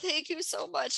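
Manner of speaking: sobbing townsman voice. Voicing a slumped townsman whom the group offers to help, crying townsman voice. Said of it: "And he's like crying".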